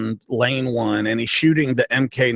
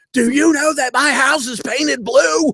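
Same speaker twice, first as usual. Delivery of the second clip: fake yell, very high-pitched; 4 dB louder than usual. Retelling acting out a fake argument for a general: imitating a fake yell. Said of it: "acting like we were yelling at each other".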